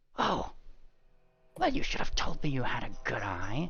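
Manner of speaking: quiet, faintly disdainful, touch of scorn. Voicing a character answering a player who spotted a trap: slight disdain. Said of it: "he says, uh, with, like, a, like, a little bit of a disdain".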